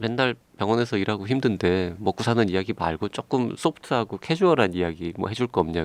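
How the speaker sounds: plain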